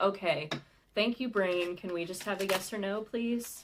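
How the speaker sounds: usual speaking voice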